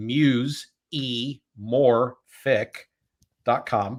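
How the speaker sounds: very slow, each syllable separated. Host introducing a guest's website to listeners, saying it very slowly, spelled out. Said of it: "Let me say that real slow".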